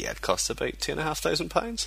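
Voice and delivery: high, scoffing, dismissive tone. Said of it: "Rock Paper Shotgun were like".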